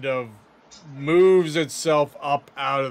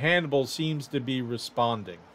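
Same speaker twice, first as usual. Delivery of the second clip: usual speaking voice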